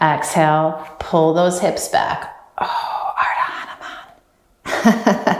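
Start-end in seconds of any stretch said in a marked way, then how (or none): 2.6-5.4 whispered, quieter and slower. Naming a pose while guiding a stretch, whispered. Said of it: "I had to whisper it".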